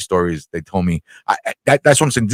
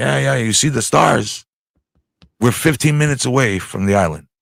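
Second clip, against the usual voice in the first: put-on heavy, laid-on Greek accent; 2 semitones higher, 3 dB quieter than usual. Retelling what dad said on the ferry at night: imitating dad's heavy Greek accent. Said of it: "my dad's got a heavy Greek accent".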